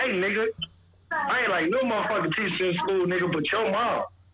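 casual, conversational way of talking. Retelling what a friend said as a compliment: imitating a friend. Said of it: "He be like".

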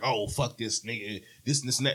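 mock dismissive tone. Acting out how others react with an attitude: imitating someone with an attitude. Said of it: "without getting an attitude and being like".

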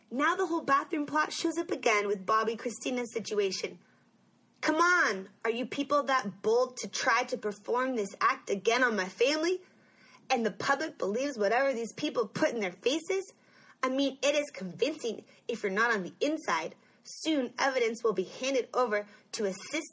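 normal talking voice

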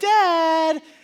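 put-on sweet coaxing tone. Parent imitating kids who want money from him: mock-sweet coaxing dad. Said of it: "you can tell by the tone of their voice".

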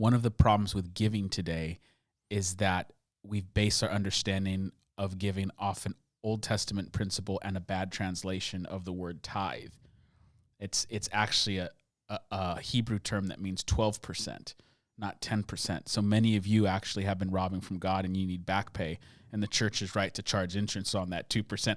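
low, soft, dead serious tone.

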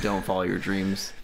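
ordinary delivery

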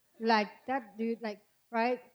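normal talking voice

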